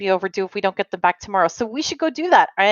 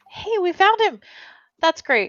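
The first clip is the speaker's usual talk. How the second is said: very high, cheerful, upbeat, hopeful tone; 9 semitones higher than usual. Speaking in character after the group finds him: upbeat and hopeful. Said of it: "upbeat and hopeful for sarcasm".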